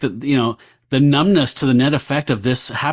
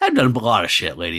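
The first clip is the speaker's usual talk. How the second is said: mock bitter sneer, much lower pitch; 4 semitones lower than usual. Recapping a story to Damon, voicing the son of Satan's reply with a mock bitter sneer. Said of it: "A bitter sneer forms on the lips".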